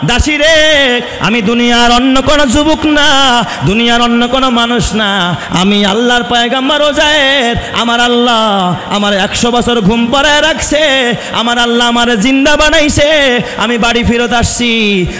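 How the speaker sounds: calling out.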